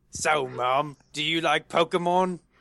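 put-on Australian accent that sounds English. In a role-play, questioning the one playing mom, attempted australian accent. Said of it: "I got to get Australian".

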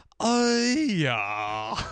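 listless, utterly bored drawl, drawn out. Retelling a movie scene where he responds to being shot: bored Burt Reynolds impression. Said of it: "He's so bored".

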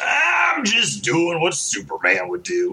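gruff, dramatic hero voice. Giving a dramatic reading of a comic book panel, gruff voice. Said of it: "I read that guy way too, like, gruff".

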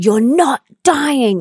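mock firm, no-nonsense, high-pitched insistence. Retelling a man beating on her chest, imitating his firm voice. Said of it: "he was so firm".

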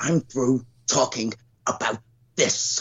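slow, deliberate, each word laid down. Showing the one Pacino line that can be done: Al Pacino impression from The Irishman. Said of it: "I can only do Pacino in Irishman when he goes".

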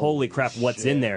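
ordinary talk, nothing marked

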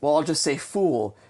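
plain

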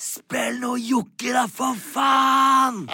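put-on all-out shout, very high, slow, drawn-out. After someone threw coins at the speaker, retelling a shout at full volume. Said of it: "roper så høyt jeg kan".

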